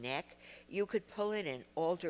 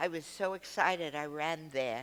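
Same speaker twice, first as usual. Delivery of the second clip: ordinary talk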